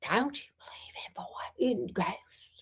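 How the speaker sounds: barely above a whisper. Reading a story aloud, redoing Alice's question: barely above a whisper. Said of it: "in a voice barely above a whisper".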